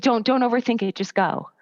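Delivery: normal talking voice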